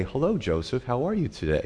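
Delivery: swooping automated computer voice. Describing office lights that greet you by chip signal, imitating an automated computer voice. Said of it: "in this automated voice".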